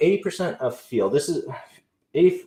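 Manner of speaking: flustered, tripping over words. Presenting on their first live, losing their place: nervous, stumbling. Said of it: "I'm nervous today with my first live".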